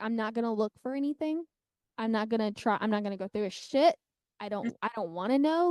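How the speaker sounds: ordinary delivery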